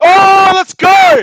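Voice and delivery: full-throated yell, very high and very loud. Reacting to a play during a basketball game, yelling. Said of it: "Sorry for the yelling".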